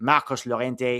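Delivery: put-on French accent. Reading out the Spanish squad, a player's name comes out in a French accent. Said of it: "I'm saying that in a French accent".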